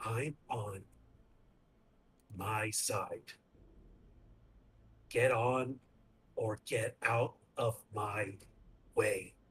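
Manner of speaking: quiet speech through clenched teeth. A player speaks as Anwar while being picked up, through gritted teeth. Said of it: "through gritted teeth".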